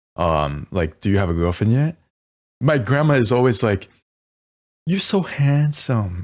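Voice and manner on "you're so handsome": imitated Vietnamese accent, higher pitch. Recalling family reunions, the speaker quotes his grandma in a Vietnamese accent. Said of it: "I'm speaking English in a Vietnamese accent".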